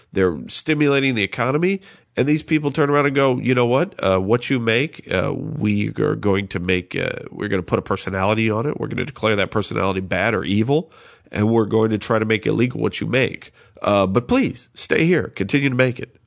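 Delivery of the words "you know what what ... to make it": ordinary delivery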